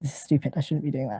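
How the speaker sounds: mumbling under breath. A man leaving the precinct after a call, muttering to himself. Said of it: "leave muttering to himself like".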